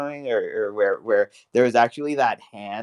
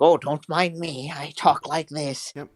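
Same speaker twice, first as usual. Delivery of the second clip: slow, grandfatherly voice pitched up high; 5 semitones higher than usual. Mocking a politician while talking with others: Reagan impression. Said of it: "I sound like a nice little grandpa for everyone".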